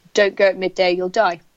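plain

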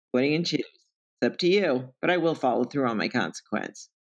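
ordinary talk

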